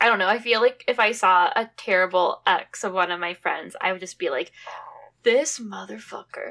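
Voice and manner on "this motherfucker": muttered under one's breath, quieter. Imagining seeing a friend's terrible ex: muttered under breath. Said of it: "just under my breath".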